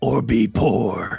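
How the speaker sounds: monster truck rally announcer voice. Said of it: "that monster truck intro".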